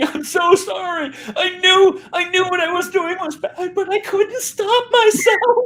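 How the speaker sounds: put-on sobbing voice, very high pitched. Retelling a first grader's apology after drawing on the car: imitating Claire sobbing. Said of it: "sobbing, crying".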